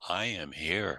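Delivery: divine, grand goddess-like voice. Retelling how a part answered during hypnosis: imitating a goddess-like voice. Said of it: "In a goddess-like voice".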